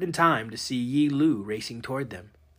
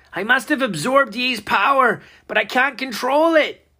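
shrill, desperate, very high, loud yell; 10 semitones higher, 6 dB louder than usual. Narrator reads Robert's line as flames spread across his jacket, shouting. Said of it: "Robert shouted".

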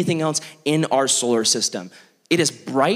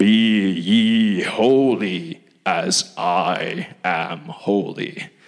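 very low, very deep, very slow, drawn-out delivery; 8 semitones lower than usual. Quoting a Bible verse as God, Mufasa or Darth Vader voice. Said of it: "I just channeled, like, either Mufasa or Darth Vader".

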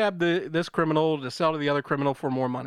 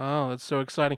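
imitated creepy flat voice; 2 semitones lower, 3 dB quieter than usual. Retelling the neighbor's reply to a game night invite: imitating a creepy monotone. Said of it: "very creepy and in monotone like that".

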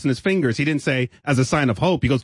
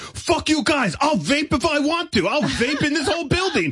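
imitated screaming, higher pitch; 12 semitones higher than usual. Retelling how a coworker stood in the middle of the office: imitating someone screaming.

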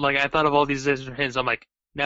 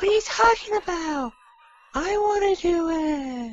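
very high-pitched, slow voice. Imitating a film scene, going up four octaves: high Mark Wahlberg voice. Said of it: "he decides to go up, like, four octaves".

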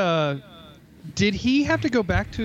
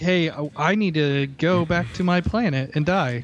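ordinary talk

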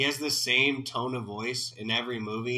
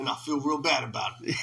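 put-on Chicago tough-guy voice.

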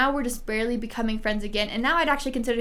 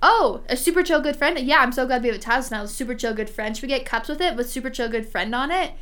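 ordinary talk, nothing marked

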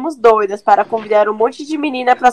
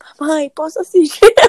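put-on whisper, pitched higher; 5 semitones higher than usual. Retelling how a little girl asked her mom for something, imitating a whisper. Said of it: "ela sussurrou".

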